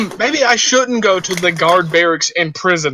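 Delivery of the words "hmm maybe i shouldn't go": usual speaking voice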